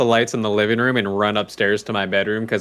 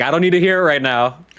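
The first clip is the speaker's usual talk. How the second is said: put-on angry alien voice, higher pitch; 5 semitones higher, 3 dB louder than usual. Acting out an imagined alien dad scolded by his wife: angry alien dad. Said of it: "he's really pissed".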